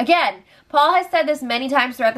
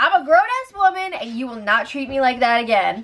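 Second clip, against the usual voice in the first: ordinary talk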